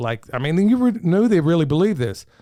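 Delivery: normal talking voice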